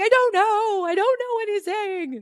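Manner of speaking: mock very high, loud, drawn-out, all-upset voice. Retelling getting upset as someone tried to help, imitating own upset past self. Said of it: "started getting all upset".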